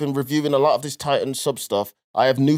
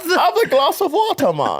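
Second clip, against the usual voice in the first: very high, swooping put-on German accent; 13 semitones higher, 3 dB louder than usual. Retelling a trip to Hamburg, in a put-on German accent. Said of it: "that was my German".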